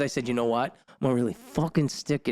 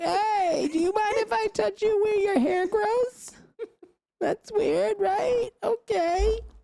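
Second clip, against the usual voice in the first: ridiculing, very high, very slow, drawn-out caricature voice. Imitating how the date would sound on a phone call: mocking impression. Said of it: "have him call you and have him sound like this".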